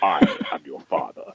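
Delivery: resonant voice ringing with a big echo. Showing how the line would sound with an echoey voice: echoey Darth Vader voice. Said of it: "If I had a echoey voice".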